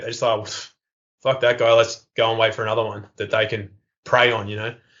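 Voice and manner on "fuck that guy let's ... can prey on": ordinary delivery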